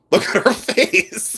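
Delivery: talking through laughter. Showing an old thrift store photo, laughing while talking. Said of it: "Sorry, I'm laughing".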